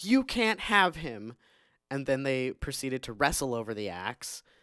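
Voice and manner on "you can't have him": acted-out scream, higher and slower. Recounting a woman grabbing an axe during a fight: retelling a scream.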